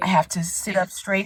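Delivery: ordinary delivery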